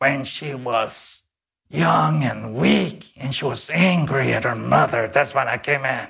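altered, demonic creature voice. Retelling what a possessed person said, in a changed demonic voice. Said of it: "this person changed his voice".

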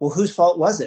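put-on small, high, childlike piping little girl voice. Retelling what the girl in the back seat piped back, little girl voice. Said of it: "in her little girl voice at the time".

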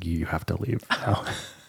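hushed, whispered mutter under the breath. Joking about muttering while the other speaker talks: pretend muttering under breath. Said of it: "under my breath".

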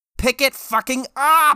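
shrieking, very high, loud yell. Narrator reading a story, a driver honking at slow cars, yelling. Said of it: "He yelled".

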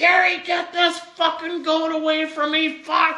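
yelling, pitched way up high. Retelling how a man chased around the yard by a goat called out: retelling a yell. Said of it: "He's yelling".

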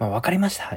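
high, cheerful, eager yes-man tone.

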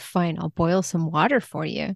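mildly exasperated, grudging, a bit put-out. Retelling a character's reply after a drink is refused: imitating a little exasperation. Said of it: "Zhang Nongsheng is a little bit exasperated".

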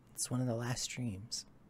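very quiet, soft, barely above a hush. Voicing Hart turning to another character: Hart speaking very quietly. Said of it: "turn to you and very quietly say".

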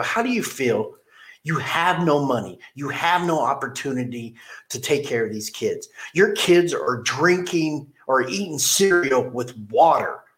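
mock, a little agitated, getting worked up. Retelling own words to a man who missed work: retelling own agitated words. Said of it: "And I was getting a little agitated".

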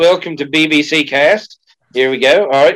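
acted Australian-accented voice. Opening the show BBC Cast, in an Australian accent. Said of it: "Now I've fallen into my Australian accent".

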